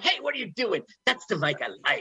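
play-acted aggressive, confrontational, very high-pitched voice. Recalling the other speaker's movie role: imitating an aggressive movie character. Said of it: "remember how aggressive you were in that".

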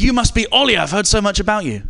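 put-on hearty, booming voice. Retelling a man greeting the speaker with a handshake, in Simon's big booming voice. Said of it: "he said in a big booming voice".

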